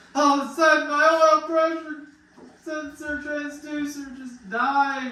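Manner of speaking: high, loud, sudden dramatic burst. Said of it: "racing story climax".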